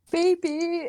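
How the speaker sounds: put-on crying. Retelling a panicked phone call about a spider: mock sobbing. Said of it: "and I'm sobbing, sobbing".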